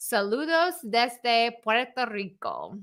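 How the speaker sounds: slight Spanish accent, slow and swooping. Reading a greeting from Puerto Rico aloud: Spanish accent. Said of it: "that Spanish accent comes through a little bit".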